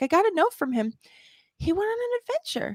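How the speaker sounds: mock tearful crying voice, very high. Retelling own words to Neil, imitating crying speech. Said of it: "I'm like crying, by the way, while I say this".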